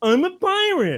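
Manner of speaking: put-on very high, garbled, hard-to-follow little boy voice. Telling a joke, the boy says what he's dressed up as: imitating the boy's way of talking. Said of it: "he kind of talked like this".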